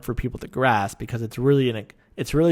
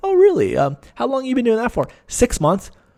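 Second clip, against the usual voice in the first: mock very high, swooping, dripping sarcasm; 12 semitones higher, 6 dB louder than usual. Imitating Scott questioning someone who coaches self-awareness, imitating sarcastic Scott. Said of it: "he'll very sarcastic".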